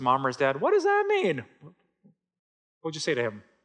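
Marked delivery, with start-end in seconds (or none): 0.6-1.4 put-on loud, shrill, very high little-kid voice. Retelling a preschooler's question to his parent in church: loud preschooler voice. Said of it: "in that really loud preschool voice".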